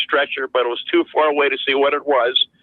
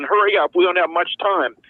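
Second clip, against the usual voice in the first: put-on screaming voice, urgent; 4 semitones higher than usual. Retelling a secondhand account of an officer screaming at soldiers, imitating an officer screaming. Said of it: "the officer started screaming".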